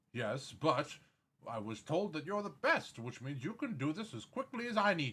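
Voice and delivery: guarded, careful, wary, cautious delivery. Narrating a scene, a noble-looking commoner speaks to a potion maker, wary voice. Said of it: "with a wary voice says".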